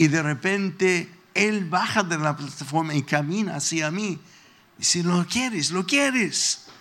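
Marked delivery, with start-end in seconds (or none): 5.0-6.6 put-on preacher voice, mild, shouting. Retelling how a preacher pointed and called out to him: imitating a preacher shouting. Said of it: "sino lo dice a grito".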